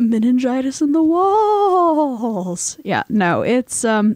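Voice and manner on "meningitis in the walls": very slow, high, put-on spooky ghost wail, drawn out. Talking with another speaker about rooms where people died, attempting a ghostly voice. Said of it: "that was supposed to be a ghostly voice".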